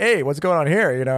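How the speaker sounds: acted playful, joking voice. Retelling teasing a girlfriend over winky emojis, acting out a joking tone. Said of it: "kind of jokingly like".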